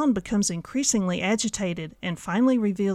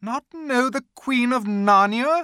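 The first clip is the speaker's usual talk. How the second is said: loud, cried-out exclamation; 4 semitones higher, 5 dB louder than usual. The Queen answers Edmund's apology: crying out. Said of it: "cried she".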